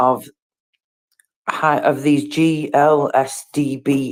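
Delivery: very slow, letters spelled out one by one. Speaking to Christopher, the speaker says a term really slowly. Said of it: "I always have to say that really slowly".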